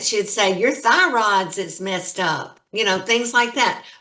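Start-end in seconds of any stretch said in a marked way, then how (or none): 0.6-2.6 put-on homespun country-accented speech. Speaker quoting an herbal healer woman they visited, in a country accent. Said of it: "she had a country accent".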